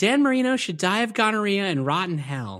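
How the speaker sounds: put-on sweet, high, gentle little old lady voice. Quoting a favourite movie line as the sweet old lady says it: imitating Finkel's mom. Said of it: "It's the way she says it".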